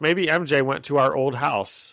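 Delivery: normal talking voice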